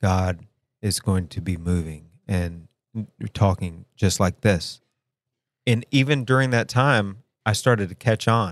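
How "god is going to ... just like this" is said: flat, droning monotone with no inflection. Imitating the man giving the whole sermon, flat monotone delivery. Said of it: "he's talking very monotone. Like".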